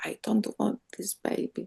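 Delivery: hushed, very quiet, low voice. Retelling what a woman lying down in the treatment room said, in a low voice. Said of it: "she said in a low voice".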